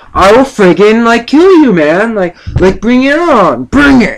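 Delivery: furious, high-pitched, angry yelling. Retelling threatening a dog that would not go away, retelling yelling at a dog. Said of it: "I'm like yelling at this dog".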